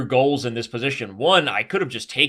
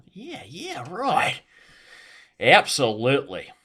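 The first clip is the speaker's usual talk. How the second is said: put-on slow, swooping Australian accent; 3 semitones higher than usual. Showing how to slip into an Aussie accent: put-on Aussie accent. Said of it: "slip into an Aussie".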